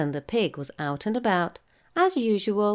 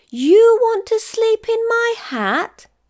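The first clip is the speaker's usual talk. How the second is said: very high, shrill, piercing, loud squeal of horror; 9 dB louder than usual. Reading a story, the narrator gives the character's reply to the tiny mouse as a horrified squeal. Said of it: "squealed Hamilton, horrified".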